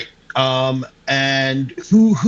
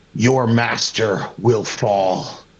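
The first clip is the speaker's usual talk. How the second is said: through gritted, clenched teeth, much slower; 4 semitones lower than usual. A tabletop player voicing his character before a final swing, through gritted teeth. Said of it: "with like gritted teeth".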